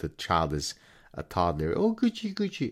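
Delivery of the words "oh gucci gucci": mocking baby talk, very high-pitched. Showing how some people speak to toddlers: imitating baby talk. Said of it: "in baby talk".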